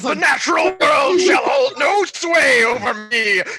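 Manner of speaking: loud, high screaming. Voicing a character screaming outside in a sandstorm: screaming in character.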